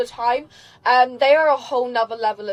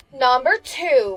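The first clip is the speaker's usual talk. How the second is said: light, put-on touch of American accent. Speaker introducing the next item, little put-on American accent. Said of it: "throws in the little American accent there with number two".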